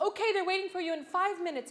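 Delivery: high, fast, loud hurried calling. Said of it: "and she's like".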